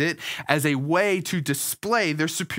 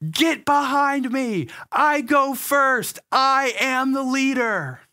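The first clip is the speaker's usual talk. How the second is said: mock, shrill, very high, furious little-kid screaming; 9 semitones higher, 4 dB louder than usual. Retelling son Leland's outburst during a bike race, imitating Leland screaming. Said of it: "he started screaming".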